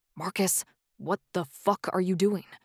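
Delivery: harsh, hissed whisper under the breath. Reading a story where one character confronts another quietly: hissed under breath. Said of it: "Charlie hissed under his breath".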